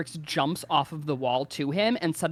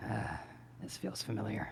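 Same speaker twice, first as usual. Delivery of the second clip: hushed, whispered murmur under the breath; 6 semitones lower, 12 dB quieter than usual. A game character lining up a shot, muttering to himself. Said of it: "he mutters".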